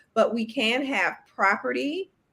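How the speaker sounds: normal talking voice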